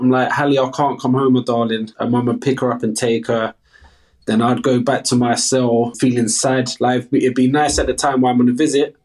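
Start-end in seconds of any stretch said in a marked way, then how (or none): none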